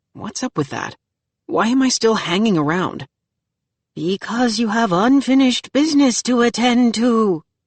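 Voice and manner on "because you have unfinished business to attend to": high, eerie, frightening spooky voice. A voice behind the narrator answers the narrator's question; scary voice. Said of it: "says a scary voice behind me".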